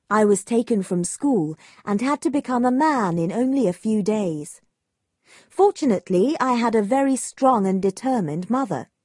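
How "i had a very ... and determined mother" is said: plain reading voice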